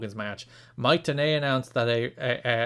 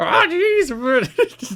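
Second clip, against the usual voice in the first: very high, loud, swooping, drawn-out jeez; 14 semitones higher, 8 dB louder than usual. Doing Jimmy Hart as Morty: Jimmy Hart as Morty. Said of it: "Jimmy Hart as Morty".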